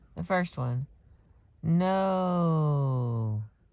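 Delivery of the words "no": long, slowly stretched-out no. Listing the ways people say no when lying, a long drawn-out no. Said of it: "which is a long, drawn out no".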